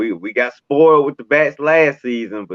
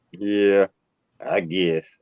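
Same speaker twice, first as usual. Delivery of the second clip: whispered, soft, breathy, half-hearted, unenthused tone; 4 semitones lower, 5 dB quieter than usual. Asked on air if he's ready for the Braves report, he answers unexcited. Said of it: "Don't sound too excited".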